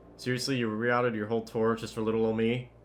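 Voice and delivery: ordinary delivery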